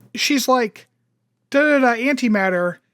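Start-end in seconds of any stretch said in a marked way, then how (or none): none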